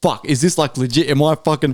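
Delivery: plain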